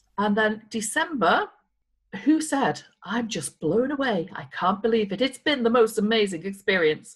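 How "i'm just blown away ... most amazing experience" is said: plain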